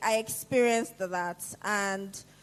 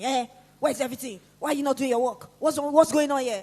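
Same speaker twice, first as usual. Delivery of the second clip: mock shouting rant, fast; 4 semitones higher, 4 dB louder than usual. Asking the audience about office jobs, the speaker acts out a boss: imitating a shouting boss. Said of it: "she's just shouting".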